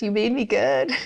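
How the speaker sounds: small, high, squeaked-out voice. Recounting god asking how he made her, she retells her answer: retelling a squeaked reply. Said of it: "I just like squeaked out these words".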